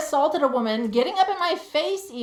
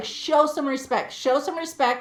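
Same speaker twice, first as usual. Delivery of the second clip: normal talking voice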